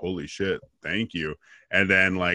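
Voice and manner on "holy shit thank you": mock stunned tone, lower and quieter. Retelling a reaction to a host's praise: imitating being stunned. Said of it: "so stunned".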